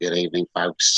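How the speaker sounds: put-on Australian accent, pilot intercom voice. Acting out an airline intercom greeting: put-on Australian accent. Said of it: "that's my Australian accent".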